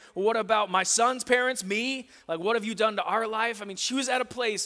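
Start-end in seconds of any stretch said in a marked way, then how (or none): 0.2-3.6 furious raised shout, acted out. Retelling a mother's reply to the man on the gallows: imitating someone shouting. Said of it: "she's shouting back to him".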